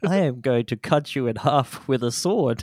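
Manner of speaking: automated, synthetic, computer-read text-to-speech robot voice. Announcing the TikTok voice, then speaking in TikTok text-to-speech voice. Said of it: "TikTok voice".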